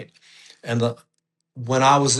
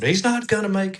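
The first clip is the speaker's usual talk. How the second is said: mock shrill, high, screamed outburst; 8 semitones higher than usual. Retelling a wife's reaction to a months-long appointment wait: imitating Kim screaming. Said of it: "She literally screamed".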